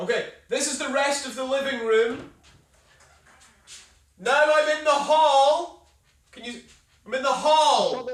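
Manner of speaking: distant calling out. Giving a house tour away from the camera: shouting from another room. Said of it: "I'll shout the tour".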